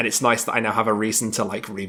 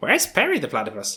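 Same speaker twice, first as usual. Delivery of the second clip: put-on high-pitched voice with a German accent; 5 semitones higher than usual. Describing a voice actor's video replies: Heinz Doofenshmirtz voice. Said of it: "I can't do the voice".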